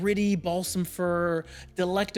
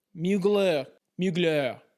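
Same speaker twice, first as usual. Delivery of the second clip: exaggerated fake French accent; 2 semitones lower than usual. Fragrance reviewer pronouncing the brand name, exaggerated french accent. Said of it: "trying to do a Frenchy voice".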